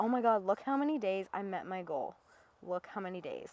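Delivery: ordinary talk, nothing marked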